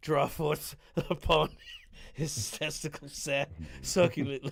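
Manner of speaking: talking while breaking into laughter. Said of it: "I can't say that shit without bre-, like, breaking".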